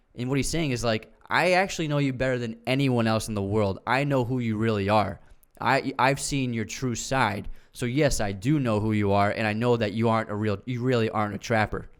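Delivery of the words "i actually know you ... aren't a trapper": ordinary talk, nothing marked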